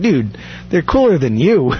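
ordinary delivery

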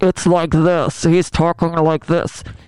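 loud, slow, blaring overmodulated voice. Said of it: "He overmodulates".

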